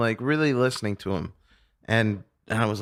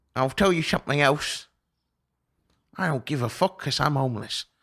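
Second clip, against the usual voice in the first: put-on old English man's voice and accent; 3 semitones higher than usual. Quoting the homeless man sharing his jacuzzi; old english guy impression. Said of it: "an old English guy who sounded like a fake voice".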